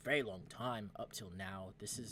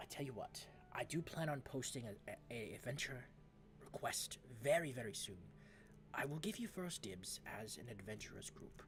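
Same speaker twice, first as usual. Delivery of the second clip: jittery, nervous, stammering, stumbling scholar voice; 2 semitones higher, 3 dB quieter than usual. A player voicing a scholar offers an adventurers group first dibs on a job, nervous. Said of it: "although he is very nervous. / and he points. / And I am just so happen to be studying the seven obelisk of [name]. / although he is very nervous".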